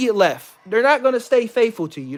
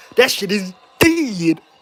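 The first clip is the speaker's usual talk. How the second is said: put-on slow, drawn-out stoner drawl. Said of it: "like Smokey from Friday".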